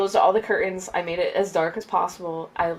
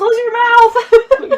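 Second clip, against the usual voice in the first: shrill, very loud, high-pitched yell; 10 dB louder than usual. Retelling reacting to a scary scene on screen: retelling a yell. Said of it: "I literally yelled".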